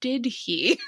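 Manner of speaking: mock speech through gritted teeth. Retelling how the brother reacted when told the news, imitating a gritted-teeth reply. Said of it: "through gritted teeth was like".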